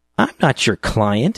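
contemptuous, scornful sneer, pitched high. A narrator reads Jean rebuffing the narrator's offer to listen, sneering. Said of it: "she sneered".

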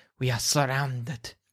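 low, hushed hiss, half to himself. Narrating for the group, voicing the character who warns them: Flask of Wine's low hiss. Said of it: "Flask of Wine hisses and says, low".

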